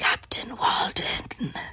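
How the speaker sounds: rough, gravelly, soft, breathy, half-whispered voice. Retelling how a man popped his head out and repeated a name, gravelly voice. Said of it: "in like this gravelly voice".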